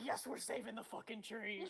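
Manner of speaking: voice dropped way down. Retelling how a friend's voice went while agreeing to save the tree: imitating Nettie's deep voice. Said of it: "Nettie's voice just goes deep, is like".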